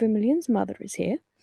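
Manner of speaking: hushed whisper in a put-on voice. Whispering in character to a monkey while locked in cells: whispering in character. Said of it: "I'm just whispering to the monkey".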